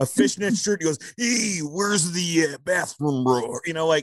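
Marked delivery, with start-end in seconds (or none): 1.2-3.6 intense, slow, drawn-out delivery. Retelling how Macho Man asked a security guy for the bathroom: intense Macho Man impression. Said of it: "not angry, just intense".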